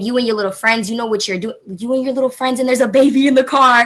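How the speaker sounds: put-on stern, accusing, yelling police officer voice. Retelling how an agent yelled at mom during a stop: imitating an officer yelling. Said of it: "There was this one guy yelling at my mom".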